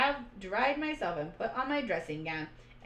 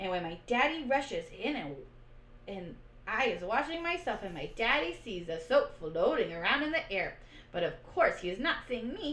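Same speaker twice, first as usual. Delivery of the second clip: ordinary delivery, nothing marked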